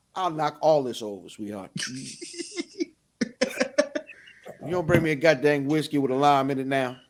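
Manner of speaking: ordinary talk, nothing marked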